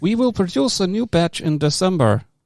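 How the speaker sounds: speech synthesizer voice. Reading an email aloud, doing a Stephen Hawking impression. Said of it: "that was Stephen Hawking".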